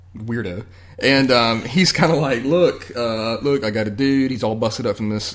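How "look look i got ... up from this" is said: normal talking voice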